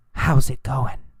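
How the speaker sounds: soft, quiet, hushed whisper. Speaker contrasts yell and whisper, then whispers the greeting. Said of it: "Or did he whisper".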